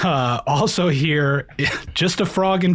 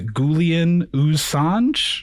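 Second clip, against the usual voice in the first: ordinary talk, nothing marked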